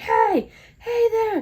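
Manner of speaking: very high, loud scream. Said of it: "like, screaming".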